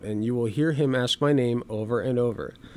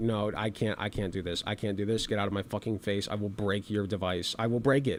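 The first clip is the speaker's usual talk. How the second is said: furious, fed-up, pissed-off angry outburst; 4 semitones lower, 8 dB quieter than usual. Acting out a hypothetical reaction to someone filming up close: acting out being pissed off. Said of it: "I'd be pretty pissed".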